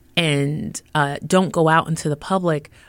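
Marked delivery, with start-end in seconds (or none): none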